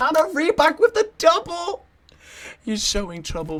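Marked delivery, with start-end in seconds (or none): 0.0-1.8 very loud, very high cracking voice. Commentating a match, voice cracking. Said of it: "Please pardon the voice crack".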